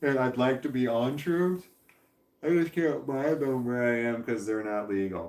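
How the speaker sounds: yawning while talking. Talking about drugs while on weed; yawning while talking. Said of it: "Sorry for the yawning".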